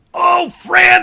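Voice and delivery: high, loud, joyful, delighted shout.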